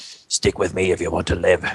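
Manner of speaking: theatrical, played stage whisper. Coming up behind another dwarf and grabbing his shoulder, the dwarf says this half-whispering. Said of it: "I'll whisper".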